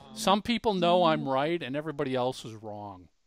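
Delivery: ordinary talk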